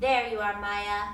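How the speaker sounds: ordinary delivery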